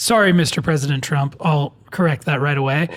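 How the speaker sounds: normal talking voice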